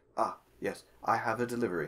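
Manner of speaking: very correct, formal, proper voice. A messenger with a delivery from his lord greets the recipient, very proper. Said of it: "very proper as he stands before you".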